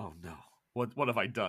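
despairing, distraught, breaking-down dismay. Voicing a character who breaks down after putting the car in gear: breaking down. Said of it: "he puts the car in gear and breaks down".

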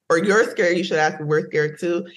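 ordinary talk, nothing marked

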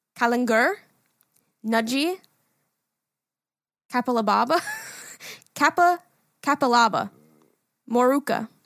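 put-on Australian accent with Australian vowels. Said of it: "Should I say it in an Australian accent?".

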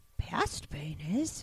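soft, breathy, whispered put-on voice. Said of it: "I can't talk like Yoda".

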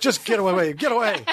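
weary, fed-up, dismissive, shooing tone. Retelling what Miss McNamara said, who hated them: imitating Miss McNamara, fed up. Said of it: "she was like".

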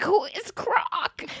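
croaky, breathy whisper. Speaker retelling the question they croaked at a press conference, croaky Gritty voice. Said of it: "it was the gritty voice".

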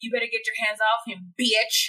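put-on aggressive voice. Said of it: "so ex-, aggressive?".

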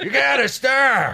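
very loud, high-pitched shout. Imitating a coach telling someone to stop, attempting an Al Pacino voice. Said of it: "I can't do a Pacino".

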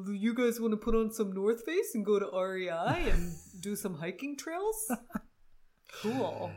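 loud, unconvincing put-on Seattle accent. Asked what a Seattle accent would be, demonstrate an inaccurate put-on Seattle accent. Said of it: "I do, because it's always just".

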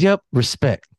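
put-on cute, sweet, innocent voice. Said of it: "she got that little cute, innocent stuff".

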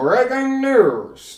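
put-on very high, old-time radio newsman voice. Recalling how radio guys used to talk, the speaker imitates them: radio announcer voice. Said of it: "the way that the radio guys did shit, they're like".

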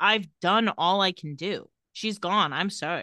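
plain

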